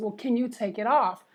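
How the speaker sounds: ordinary talk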